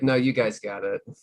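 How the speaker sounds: ordinary delivery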